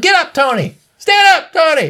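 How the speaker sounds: mock very high, very slow, drawn-out hollering. Recounting playing a skateboarding game, retelling a yell at the character. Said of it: "And I'm yelling".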